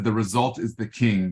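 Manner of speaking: ordinary delivery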